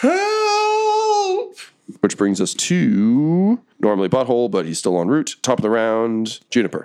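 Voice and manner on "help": very high, shrill, stretched-out goblin shriek. Voicing a goblin booting the door open: goblin yelling for help. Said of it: "and he just yells".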